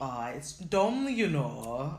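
very slow, botched put-on Birmingham accent. Trying a Birmingham accent after being asked to: bad Birmingham accent. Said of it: "That's my Brum accent".

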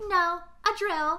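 high, breezy, acted offhand and totally unbothered. Recounting a scene, the speaker quotes the girl's reply; mock-nonchalant reply. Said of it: "so nonchalant".

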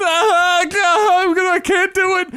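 very high-pitched, very slow, drawn-out sobbing. Retelling a student who breaks down during an exam: imitating someone crying. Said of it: "crying her eyes out".

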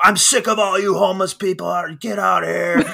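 mock piercing, shrill, very high-pitched yell. Retelling how an owner yelled at a passed-out fan: imitating an owner yelling. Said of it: "yelling at him".

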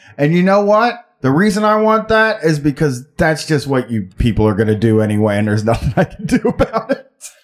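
ordinary talk

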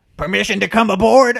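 shrill, very high, very loud yell. Acting out entering through the door in character: yelling out. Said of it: "I'm gonna yell out".

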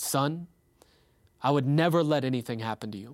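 acted calm, reassuring, peaceful voice. Retelling what a man said on a phone call, imitating a calm voice. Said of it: "he just so calmly, just peacefully".

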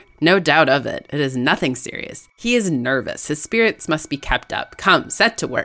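ordinary delivery, nothing marked

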